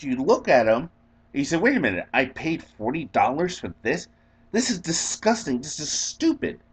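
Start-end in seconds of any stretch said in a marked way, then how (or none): 1.6-6.5 stunned, totally shocked, disbelieving complaining tone. Acting out a diner's reply to the cook, acting shocked. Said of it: "and you're like totally shocked".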